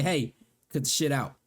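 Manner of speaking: normal talking voice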